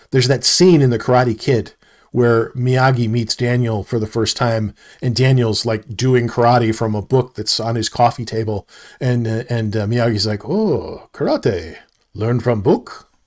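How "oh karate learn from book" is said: slow, swooping, drawn-out, unimpressed disapproving tone. Retelling the Karate Kid scene where Daniel learns karate from a book: disapproving Miyagi impression. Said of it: "you can hear the disapproval in his voice".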